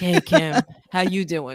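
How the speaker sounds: smooth, honey-sweet, honeyed voice. Host greeting guest Kim, showing how everyone starts talking like honey. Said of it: "you start talking like honey too".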